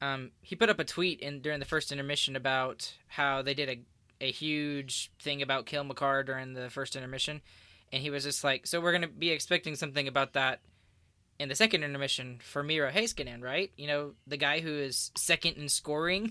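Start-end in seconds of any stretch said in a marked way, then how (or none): none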